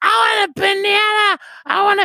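put-on New York accent. Speaker recounts a dream where a newborn baby spoke, imitating a New York accent. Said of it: "this New York kind of New York".

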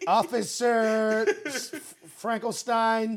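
very loud, high, barked shout. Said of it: "Why are you yelling all this?".

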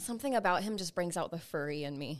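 normal talking voice

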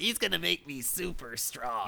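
put-on high, soft, whiny spoiled baby voice.

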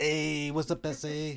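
put-on Italian accent. Retelling how Martin answered a request for an Italian accent: imitating Martin's Italian accent. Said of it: "Now do an Italian accent".

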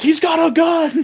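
very high, stretched, drawn-out alarmed scream. Summarizing a story's plot, the speaker acts out a character on a bus: retelling a scream. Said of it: "Light screams".

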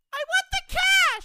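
all-out yell, very high and very loud. Rehearsing a robber's demand, the actor repeats it after being told louder, loudest shout. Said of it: "Come on, louder!".

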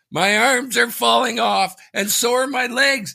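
mock screeching at a very high pitch. Retelling how they screamed in a theater during a movie, reenacting the scream. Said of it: "I'm screaming".

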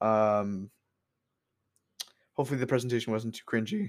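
voice audibly cracking on the word "cringy". Thanking audio listeners after a presentation, voice cracking. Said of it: "Voice crack".

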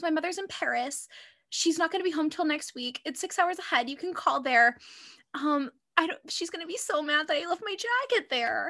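high-pitched fake weepy sobbing. Retelling a character who lies to the police: imitating fake crying. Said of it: "She starts fake crying".

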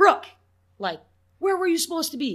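very high, very loud, shrill holler. Speaker acts out yelling at Brooke for not being in position, retelling a loud yell. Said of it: "I'm going to yell at you and be like".

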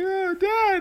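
mock, very high-pitched, tearful crying whimper. Retelling scolding his son, imitating the son crying. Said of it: "My son is like crying".

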